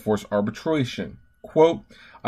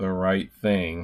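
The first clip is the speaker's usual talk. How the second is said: very, very heavily sarcastic tone; 6 semitones lower, 6 dB quieter than usual. Reading out a company's quoted promise to do right: very sarcastic. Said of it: "I'm being very, very sarcastic".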